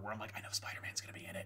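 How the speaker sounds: hushed, soft, unvoiced whisper.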